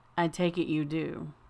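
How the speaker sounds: extraordinarily measured, slow, carefully controlled voice. Narrator reads Morrison replying to the narrator in an extraordinarily measured voice. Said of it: "in an extraordinarily measured voice".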